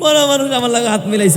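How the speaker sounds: frightened scream.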